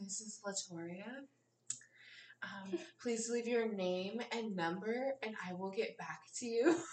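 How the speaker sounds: very sultry, soft chat-line voice. Performing her voicemail greeting for the others, in a very sultry voice. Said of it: "Very sultry".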